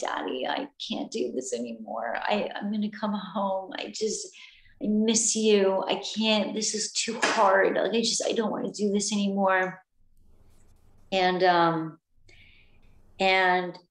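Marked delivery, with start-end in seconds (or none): 0.0-9.8 acted tearful pleading, stumbling over words. Retelling a tearful phone call to father: retelling own past crying. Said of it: "I was just, like, crying, like".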